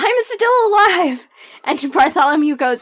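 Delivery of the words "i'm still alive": very high-pitched shout. Acting out Sable cutting into the tale's ending: Sable yelling. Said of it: "Sable yells".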